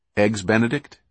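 ordinary delivery

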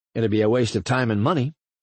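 ordinary delivery

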